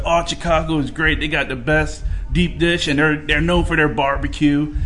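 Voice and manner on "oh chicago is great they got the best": ordinary delivery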